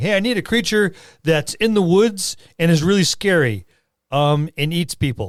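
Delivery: mock voice, pitched high and loud, demanding.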